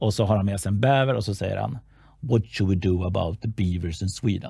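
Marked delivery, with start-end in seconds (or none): 2.2-4.5 put-on slight Russian accent with bumpy English. Acting out a servant in a film scene who brings in a beaver, slight russian accent. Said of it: "med lite rysk knackigt då".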